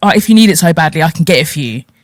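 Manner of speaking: patronizing, condescending, dismissive tone. Retelling someone's offer to get the money, imitating a condescending tone. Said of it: "I didn't like that tone".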